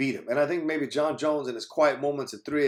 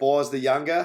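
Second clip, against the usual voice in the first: terrible fake Boston accent; 4 dB louder than usual. Listing names of knights, in a bad put-on Boston accent. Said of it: "my uh, terrible attempt at Boston accents for the names of those knights".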